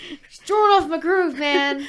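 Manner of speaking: mock-offended outrage, high-pitched and loud.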